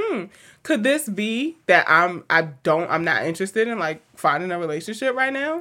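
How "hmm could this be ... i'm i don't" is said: usual speaking voice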